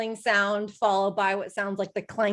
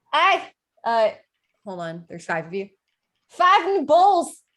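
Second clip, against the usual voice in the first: loud shouted call, pitch rising; 4 semitones higher, 7 dB louder than usual. Voicing an innkeeper calling an order over her shoulder: yelling back. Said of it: "yells back".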